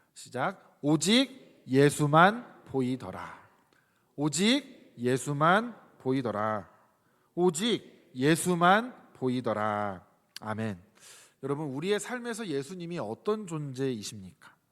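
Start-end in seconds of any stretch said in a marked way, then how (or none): 0.8-10.1 much louder and slower, clearly enunciated. Leading listeners in reading a verse aloud three times, loud but slow and clear. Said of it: "세 번 크게 하지만 천천히 또박또박".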